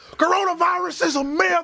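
put-on high-pitched yelling.

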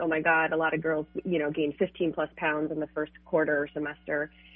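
ordinary talk, nothing marked

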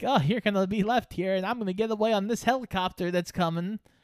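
mocking taunt.

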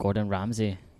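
put-on Australian accent. Naming who cares about sharks, in a put-on Australian accent. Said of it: "That was an Australian accent".

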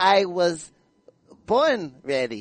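put-on very slow English with a Spanish accent. Retelling how a fighter sounded speaking English: Canelo Alvarez speaking English. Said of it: "it's like".

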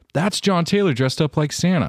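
put-on very loud, very high-pitched bratty kid voice. Retelling what he said as a kid in front of the little cousins, very loudly. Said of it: "And I say very loudly".

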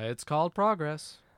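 dry, sarcastic tone. Replying to a complaint about new weapons turning up: sarcastic. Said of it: "I sense some sarcasm".

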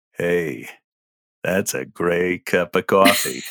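very low, slow, drawn-out character voice. Showing different audition takes of one coffee line: as a groin character. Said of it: "if you say it as a groin character".

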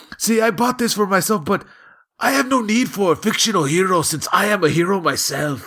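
put-on thick Mexican accent. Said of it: "strong Mexican accent".

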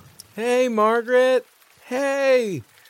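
exhausted. A just-healed character greets Margaret, exhausted. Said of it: "You look like you've had a day".

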